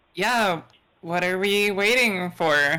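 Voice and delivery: forced bravado with a wavering voice. A player voices her character trying to sound brave: wavering, forced bravado. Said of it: "her voice is belying her bravery".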